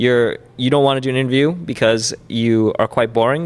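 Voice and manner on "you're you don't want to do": plain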